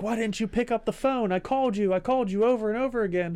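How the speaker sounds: mock yelling, very high and shrill. Retelling a scene where a woman yells at her dead boyfriend, imitating a woman yelling. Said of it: "yelling at him".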